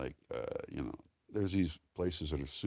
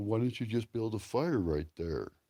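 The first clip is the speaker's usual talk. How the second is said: put-on dim-witted dumb guy voice; 5 semitones higher than usual. Showing a voice he says he doesn't really talk in, dumb guy voice. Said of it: "that's my dumb guy voice".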